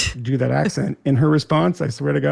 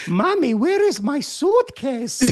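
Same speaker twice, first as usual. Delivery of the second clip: put-on high child voice with Slovenian accent; 12 semitones higher than usual. Recalling a video of Barron as a child, the speaker imitates Barron's Slovenian accent. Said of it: "where he sounds Slovenian".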